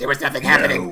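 loud, creepy smoker's voice. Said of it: "slip into her creepy voice".

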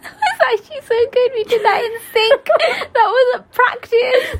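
delighted laughter, high-pitched.

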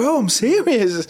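acted, very high-pitched, offended, mad insistent tone. Retelling how a guy reacted after being told to shut up, imitating someone getting mad. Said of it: "he got real mad in his feelings".

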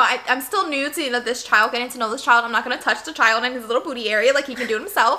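plain

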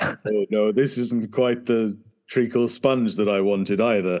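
very deep, rumbling bass voice. Recalling a man with one of the deepest voices ever heard, imitating Jervis's deep voice. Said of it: "one of the deepest voices you will ever hear".

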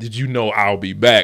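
ordinary delivery

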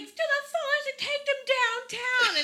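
very high, loud, worked-up yelling. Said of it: "She was yelling".

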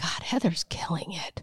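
mimicked mutter under the breath. Telling the listener what the husband mutters while scrolling Instagram, under the breath. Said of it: "under his breath".

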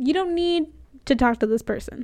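ordinary talk

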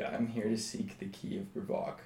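mock dim-witted voice. Speaking in character to seek a key: put-on dense voice. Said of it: "I will speak out in dense voice and say".

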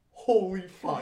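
sheer terror in a crying-out voice. Retelling waking up from a nightmare at seven: imitating own terrified exclamation. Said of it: "just terrified".

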